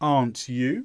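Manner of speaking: "aren't you" climbing upward in pitch at the end. Teaching question tag intonation, rising pitch at end of aren't you. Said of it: "The intonation goes up".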